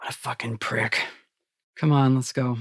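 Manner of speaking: quiet grumbling mutter under the breath. A game narrator voices a character at the boat railing, muttering under his breath. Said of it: "mutters under his breath".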